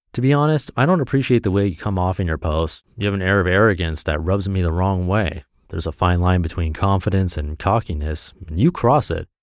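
ordinary talk, nothing marked

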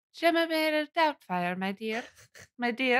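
soft, soothing put-on voice. Trying out the soothing voice being discussed, Mrs. Doubtfire impression. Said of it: "What kind of voice is it?".

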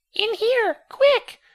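very high, scratchy, squeaky creature voice. A talking creature urges the narrator to come inside: scratchy, squeaky creature voice. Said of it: "in a scratchy, squeaky voice".

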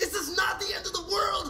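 shouting. A character argues with a companion sitting right next to them, yelling. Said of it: "Use your indoor voice".

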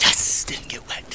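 hushed, whispered little victory cheer.

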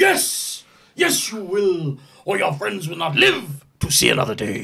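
swooping, high, dramatic delivery with wide pitch swings. Performing a villain answering the hero's refusal: Frank Langella as Skeletor. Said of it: "the exact cadence".

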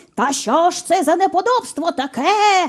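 hoarse barking dog voice. Narrator reading a dog's line in a story, hoarse barking dog. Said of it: "хрипко загавкав пес".

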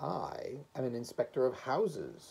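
ordinary delivery

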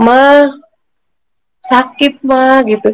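mock, pained, whimpering moan. Recalling crying at night and calling to mother, retelling a pained moan. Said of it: "merintih gitu kan".

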